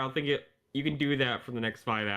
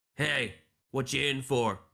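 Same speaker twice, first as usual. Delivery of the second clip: scruffy, rough character voice. Voicing a scruffy deep gnome cellmate leaning over: scruffy deep gnome prisoner. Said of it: "As he leans over to you".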